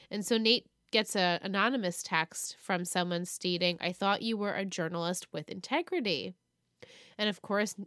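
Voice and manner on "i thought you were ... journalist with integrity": ordinary talk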